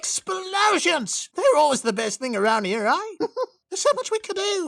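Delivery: loud, high-pitched rowdy voice. Showing impressions with a voice mod: rowdy Junkrat voice. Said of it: "go absolute rowdy as Junkrat from Overwatch".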